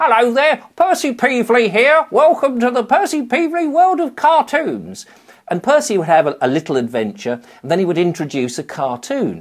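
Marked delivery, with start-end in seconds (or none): 0.0-5.1 silly, very high-pitched character voice. Recalling playing the host of World of Cartoons, speaking in the Percy Peevely voice. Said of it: "I always talk like this".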